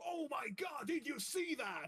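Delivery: high-pitched radio broadcast announcer voice. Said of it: "like an announcer that says".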